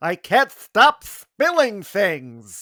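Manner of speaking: high, very slow cartoon character voice. Repeating the line when asked again, in a cartoon character voice. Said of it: "Do it one more time".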